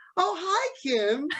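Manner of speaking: high voice rising sharply in pitch. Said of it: "when she got to Kim, it just, like, went up like that".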